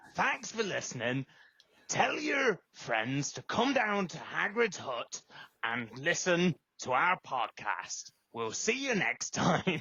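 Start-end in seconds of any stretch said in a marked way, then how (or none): 0.1-8.1 put-on old sailor voice. Closing the podcast after being asked to do Hagrid: Hagrid voice. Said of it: "You sound like someone off Green Green Grass".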